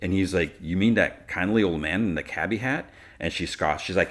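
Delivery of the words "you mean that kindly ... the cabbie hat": usual speaking voice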